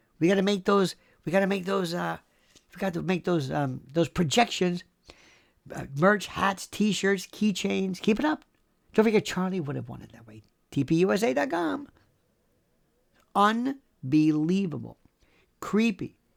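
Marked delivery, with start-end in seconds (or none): none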